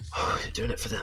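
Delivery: muttering. Voicing a character who watches another concentrate: mumbling. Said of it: "you just kinda hear him mumbling".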